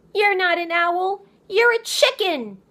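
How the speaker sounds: very high, crowing, triumphant, gloating cry. Narrator reading Poppy taunting the owl, Poppy crying out in triumph. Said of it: "owl and mouse, / She reached down and yanked the quill from her sash, / [name] panted between hard breathing".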